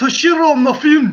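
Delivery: slipping into a loud, high Scottish accent. Attempting to pronounce an actor's name when asked, sounding scottish. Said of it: "I sounded Scottish".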